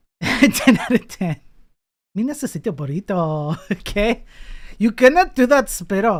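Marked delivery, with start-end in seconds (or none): 2.1-3.6 stock cartoon-style put-on Mexican accent. Showing their best Mexican impression, in a Mexican accent impression. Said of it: "the best Mexican impression I have is".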